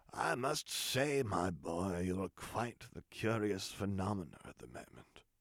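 rasping villain voice. A narrator reads the Emperor speaking to Luke in his sanctum, the Emperor's rasping voice. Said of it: "he rasped out".

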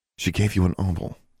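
ordinary delivery

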